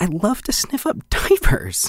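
high, slow, laughing delighted realization. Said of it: "one more where it's, like, in the moment".

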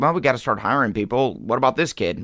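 plain

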